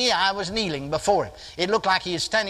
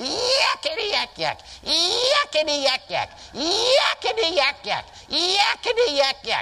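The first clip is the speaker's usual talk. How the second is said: piercing whistle-like squeal, very high, very slow, drawn out; 10 semitones higher than usual. Retelling how a little imp jumped up and hollered, in a shrill piercing voice. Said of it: "hollered in a real shrill voice".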